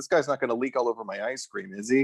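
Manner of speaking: ordinary talk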